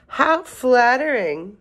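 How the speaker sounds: loud cry, flattered and high-pitched. A tiny old woman offered something by the animals, crying out, flattered. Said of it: "cried the tiny old woman".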